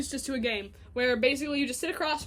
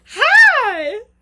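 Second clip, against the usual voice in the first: high-pitched, very loud, drawn-out; 9 semitones higher, 16 dB louder than usual. Mimicking how a companion greets everybody on the path, high-pitched hi. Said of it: "in that high-pitched voice".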